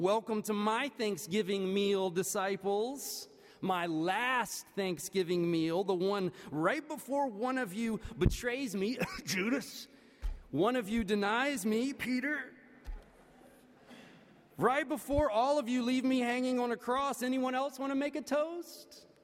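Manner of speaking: put-on sugary, passive-aggressive, sarcastic tone. Reimagining the disciples' last meal with a toast, as a sarcastic Jesus impression. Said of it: "read Jesus' words in a more sarcastic kind of tone".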